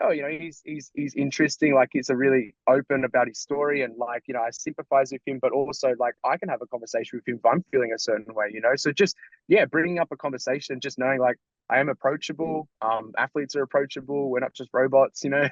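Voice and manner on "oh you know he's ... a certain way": ordinary talk, nothing marked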